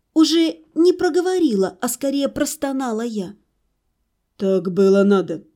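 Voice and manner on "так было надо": calm, brutally frank and blunt, much lower pitch. Arina answers the narrator's moaned question: calm, brutally frank. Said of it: "спокойно и убивающе откровенно ответил".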